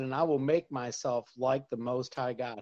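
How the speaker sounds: ordinary talk, nothing marked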